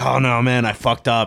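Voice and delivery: put-on Mexican accent. Retelling Andor's funeral scene, quoting him in Andor's Mexican accent. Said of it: "Like in his Mexican accent".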